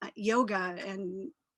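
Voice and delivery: ordinary talk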